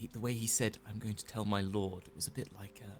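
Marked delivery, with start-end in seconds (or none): 0.9-2.0 put-on posh upper-class English accent. Quoting what he said he would tell his lord: put-on posh voice. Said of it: "I'm doing the posh voice".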